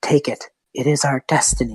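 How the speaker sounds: low, deep demonic voice. Voicing a demon speaking in a character's head: demon voice. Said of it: "like this demon, just go".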